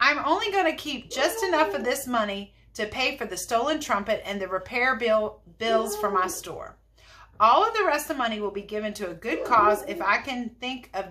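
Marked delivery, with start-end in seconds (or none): none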